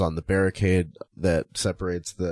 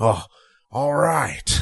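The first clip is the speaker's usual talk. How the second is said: pitched-up, happy tone; 7 semitones higher than usual. Retelling how Vince reacted to the decision: imitating Vince getting happy. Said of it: "starts getting happy".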